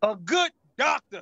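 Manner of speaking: loud, commanding tone of authority. Giving an answer in a guessing game: said with authority. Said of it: "You said that with authority".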